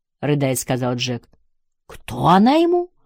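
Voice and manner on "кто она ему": aghast, horrified, high-pitched. One onlooker asks another who the woman is to a sobbing man: horrified. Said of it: "в ужасе спросил Билл".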